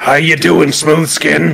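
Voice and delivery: put-on goblin voice and accent. Showing what trying to speak Goblin does to a speaker, goblin accent. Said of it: "The moment you try and speak Goblin".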